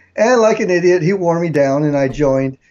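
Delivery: ordinary delivery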